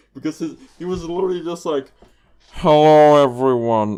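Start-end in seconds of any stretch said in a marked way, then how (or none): 2.5-3.9 acted very loud, bored, fed-up narrator voice. Retelling how a YouTube narrator greeted viewers: imitating a weary, bored narrator. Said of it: "he wants to be killed really badly".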